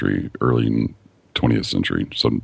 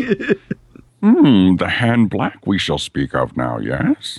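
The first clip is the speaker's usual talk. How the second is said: terrible creature voice, very high, slow and swooping; 10 semitones higher, 3 dB louder than usual. Joking in a conversation about Yoda, doing a terrible Yoda impersonation. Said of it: "A terrible Yoda impersonation".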